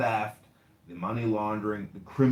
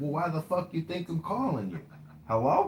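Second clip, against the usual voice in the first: put-on woman's voice, pitched up high; 7 semitones higher than usual.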